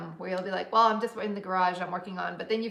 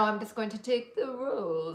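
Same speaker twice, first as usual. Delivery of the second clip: mock fancy, posh voice, spoken slower. Imitating how he'll still say it, in that put-on fancy voice. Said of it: "he'll say it with that voice still".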